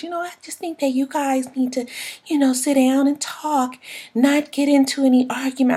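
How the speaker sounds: gentle soft voice. Retelling what Rashida said to the two women: imitating a soft voice. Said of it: "with that soft voice".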